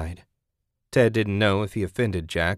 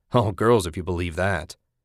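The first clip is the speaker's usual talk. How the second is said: ordinary delivery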